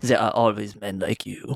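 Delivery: put-on failed German accent that comes out French. Retelling a movie scene, quoting an old German man defying Loki: attempted German accent, sounds French. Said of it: "that sounded kind of more French".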